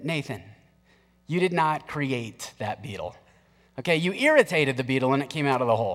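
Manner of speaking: tender, kindly, very gentle and loving tone. Retelling how the parents answered a child's claim: imitating parents speaking gently. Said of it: "very lovingly, very gently said".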